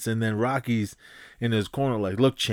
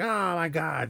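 mock scream, much higher pitch, slower; 6 semitones higher than usual. Retelling a fight, as a fighter's wife: imitating someone screaming. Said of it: "she was screaming like".

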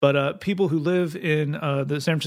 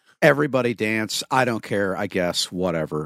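put-on lethargic, unenthusiastic voice; 7 semitones lower than usual. Mocking the jock jam Jed never wrote, imitating Jed's lethargic energy. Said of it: "That was the kind of energy he brought".

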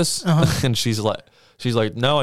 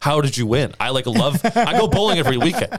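play-acted, genuinely irritated, mad tone, pitch rising; 3 semitones higher than usual. Retelling losing to a date at bowling: imitating own angry words. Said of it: "I was just, like, actually mad".

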